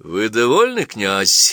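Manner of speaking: jeering, taunting, mocking voice with swooping pitch. Narrator reading Virsky questioning the prince, mocking question. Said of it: "насмешливо спросил Вирский".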